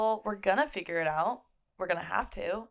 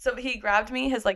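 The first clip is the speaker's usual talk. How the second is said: ordinary talk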